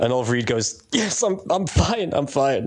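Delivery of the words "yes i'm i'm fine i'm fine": pained, pitched up, dragged out very slowly. Retelling an actor's line on set with a broken arm: imitating Oliver Reed in pain. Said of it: "in pain 'cause he's got a broken arm".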